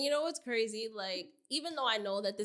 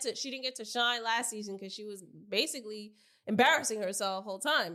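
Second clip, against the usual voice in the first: usual speaking voice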